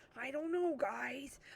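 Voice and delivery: slow, fretful, anxious, worried dog voice. Showing the voices given to the speaker's dogs, doing Pi's worried dog voice. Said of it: "he's very worried about everything".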